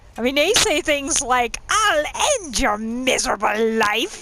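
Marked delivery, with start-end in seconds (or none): 1.7-4.3 put-on very snotty British accent, laid on thick. Quoting a favourite battle cry, the speaker uses a snotty British Thalmor accent. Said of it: "in this really snotty British accent".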